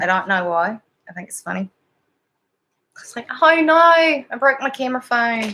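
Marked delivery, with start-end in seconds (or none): 3.4-5.5 put-on, slow New Zealand accent. Speaker saying they like the New Zealand accent, then doing a New Zealand accent. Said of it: "I like the New Zealand accent better".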